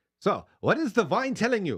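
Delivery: put-on German accent, very high, very loud, swooping. Quoting a man who served wine at tastings, in a put-on german accent. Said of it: "that's my German accent".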